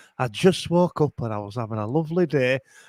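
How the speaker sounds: put-on low, old-fashioned 1970s tv advert narration voice. Imitating the other speaker's opening words as a seventies Hovis advert voice. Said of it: "sounding like a Hovis advert from the seventies".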